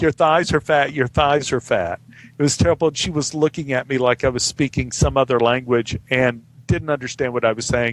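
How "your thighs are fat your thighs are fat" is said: put-on, mild, half-shouted jeering, repeated. Recalling trying to insult a woman enough to make her cry: retelling own yelling. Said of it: "I was just yelling like".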